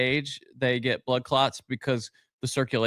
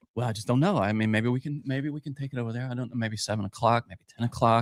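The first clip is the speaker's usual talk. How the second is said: muttering under breath, mumbling to himself; 2 semitones lower than usual. Showing how he talks to himself while walking past a stranger, muttering under breath. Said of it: "but under my breath".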